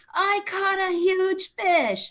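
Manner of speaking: put-on, very high, thrilled little-boy scream. Storyteller acts out a little boy on the boat, retelling a little boy screaming. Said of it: "started screaming".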